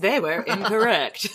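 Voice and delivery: documentary-style history voice-over narrator voice. Joking about a wrong historical belief: narrator voice. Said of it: "narrator voice".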